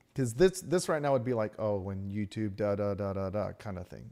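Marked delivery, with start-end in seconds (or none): 1.6-4.1 low, flat, monotonic AI dub voice. Demonstrating how YouTube's built-in AI voice would dub this, monotone YouTube AI voice. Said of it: "It's monotonic".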